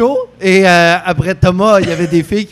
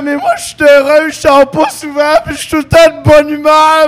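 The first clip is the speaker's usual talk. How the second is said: put-on high, tearful sobbing through the words; 8 semitones higher, 3 dB louder than usual. Retelling what a crying girl said after the show: imitating someone crying. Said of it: "arrêtait pas de pleurer en disant".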